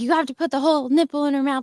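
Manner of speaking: put-on yelling, light, bossy scolding. Retelling what a nurse said to the speaker: imitating someone yelling. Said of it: "the nurse was, like, yelling at me".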